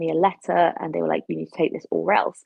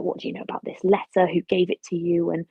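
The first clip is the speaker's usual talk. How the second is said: hissed words at close range. Retelling a masked Crimson Reaper questioning him at a military council, hissing. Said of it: "he's sort of hissing at me like".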